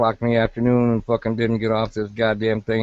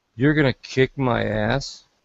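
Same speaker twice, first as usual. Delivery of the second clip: put-on child voice, serious and earnest; 2 semitones higher than usual. Retelling how the youngest child looked up and asked: imitating a child speaking seriously. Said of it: "look up at me and seriously say".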